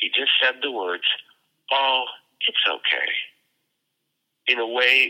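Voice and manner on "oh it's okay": very delicate, tender voice. Retelling the words a man said to her, imitating a delicate voice. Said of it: "in a most delicate voice".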